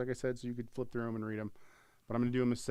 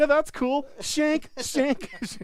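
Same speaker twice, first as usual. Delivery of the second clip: put-on smiling voice, higher and louder; 10 dB louder than usual. Imitating a customer saying shank while smiling: imitating Andy smiling. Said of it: "And he smiles the whole time".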